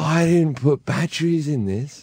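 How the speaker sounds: put-on drunken talking. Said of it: "drunkenly walks up and goes".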